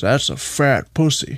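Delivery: put-on rough, gruff western voice. Two people riffing, one line done in Jeff Bridges True Grit voice. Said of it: "Now I'm imagining it in the True Grit voice".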